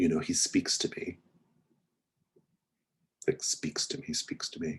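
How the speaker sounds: very quiet, soft, hushed, confiding tone. Voicing a character who turns to another character: speaking very quietly. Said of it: "very quietly now".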